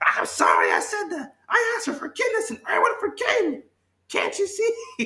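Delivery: very high, squeaky evil cartoon voice, wild swoops. Acting out how he might have apologized, sounding like evil Mickey Mouse. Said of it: "I don't know why I sound like evil Mickey Mouse".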